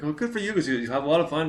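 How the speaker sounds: high, very pumped-up, excited gush. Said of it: "So she's like".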